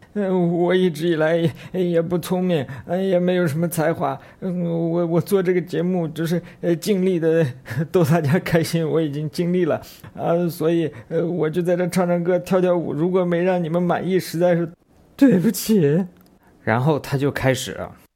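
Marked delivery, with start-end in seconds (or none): 0.2-16.1 acted-out tearful, halting, high, choked-up voice catching. Retelling a comedian's apology to the audience, imitating someone choking up. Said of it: "他说着说着就开始哽咽了".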